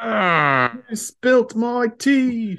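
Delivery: put-on angry British accent, very high, very slow. Wondering what an angry British guy sounds like, trying one: mock-angry British accent. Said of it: "what does an angry British guy even sound like".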